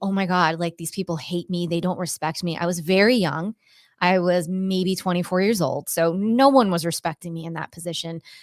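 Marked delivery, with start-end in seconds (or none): 0.0-2.6 put-on sobbing, crying. Retelling past calls home to a mentor: retelling own past crying. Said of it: "crying, going".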